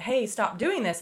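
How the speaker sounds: usual speaking voice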